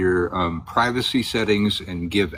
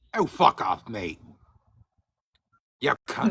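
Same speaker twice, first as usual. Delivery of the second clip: put-on British accent, rough blokey voice; 2 semitones higher, 4 dB quieter than usual. Asked whether he can do a british accent, showing one, in a british accent. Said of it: "can you do a British accent?".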